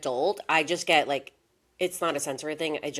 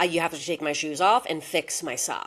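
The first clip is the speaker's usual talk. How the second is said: ordinary talk, nothing marked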